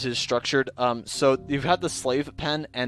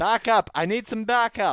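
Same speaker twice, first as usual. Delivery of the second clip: high-pitched, acted yelling out loud; 8 semitones higher than usual. Voicing a fleeing enemy calling for help: shouting in character.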